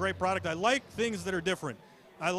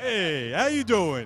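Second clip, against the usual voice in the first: loud, laid-on, put-on Italian-American accent; 6 dB louder than usual. Speaker offering to say a line the Goomba way instead, Goomba way voice. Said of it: "I could say it the Goomba way".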